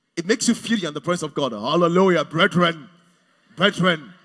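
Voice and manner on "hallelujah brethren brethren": loud, booming preacher voice. Speaker showing how pastors sound when they preach, pastor's voice. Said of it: "pastors have a pastor's voice".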